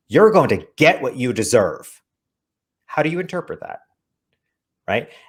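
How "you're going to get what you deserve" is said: rather aggressive-sounding tone. Recounting a Facebook experiment, saying the line in a rather aggressive tone. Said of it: "in a rather aggressive tone".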